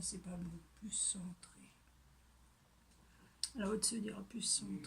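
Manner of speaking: soft, unvoiced whisper.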